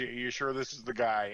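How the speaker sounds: ordinary talk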